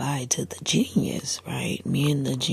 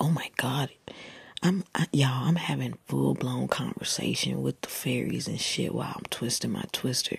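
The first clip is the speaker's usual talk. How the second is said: ordinary talk, nothing marked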